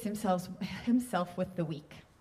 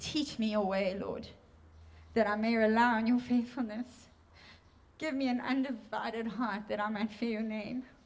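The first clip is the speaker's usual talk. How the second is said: tearful voice, crying while speaking. Reading a psalm aloud during a sermon on devotion, crying while speaking. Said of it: "I don't know why I'm crying".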